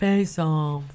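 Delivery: hangdog, jowly, droopy film-star style voice. Doing an impression asked for by another speaker: Nicolas Cage voice. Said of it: "trying to do a Nicolas Cage impression".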